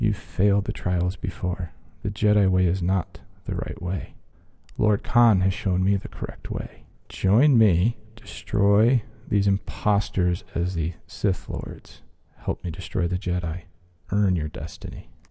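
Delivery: close, confidential, voiced stage whisper. A narrator voices a man holding a lightsaber to the listener's hand, half-whispering. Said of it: "And he simply whispers".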